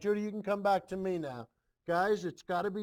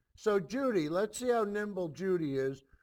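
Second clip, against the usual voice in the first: usual speaking voice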